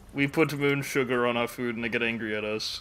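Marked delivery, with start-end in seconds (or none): none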